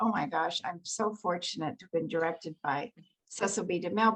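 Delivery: ordinary delivery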